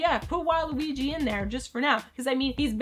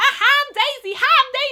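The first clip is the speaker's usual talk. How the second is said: put-on cheerful yelling, higher and louder; 12 semitones higher, 8 dB louder than usual. Mocking a game character's annoying voice: imitating Daisy's yelling voice. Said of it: "I just really don't like her voice".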